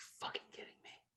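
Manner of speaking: whispered, sour, bitter under-breath grumble. Speaker retells a woman's reaction to a fumble in a football game: retelling a mutter under her breath. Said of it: "like just mutters under her breath".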